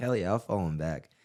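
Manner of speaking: ordinary talk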